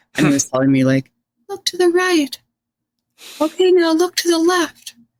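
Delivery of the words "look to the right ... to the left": very high, almost castrato-like pitch. Imitating the attending helper during the speaker's surgery, in a high castrato-type voice. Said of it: "almost like castrato type voice".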